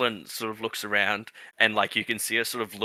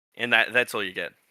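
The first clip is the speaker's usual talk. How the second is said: usual speaking voice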